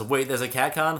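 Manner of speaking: ordinary talk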